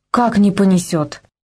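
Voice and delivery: plain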